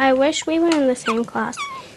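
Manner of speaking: ordinary delivery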